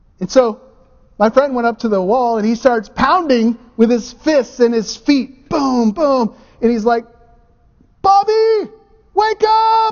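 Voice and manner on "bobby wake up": acted, shrill, very high scream at top of lungs. Retelling a friend pounding on a wall to wake bobby, imitating someone screaming. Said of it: "he's screaming at the top of his lungs".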